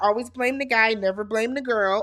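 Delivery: ordinary talk, nothing marked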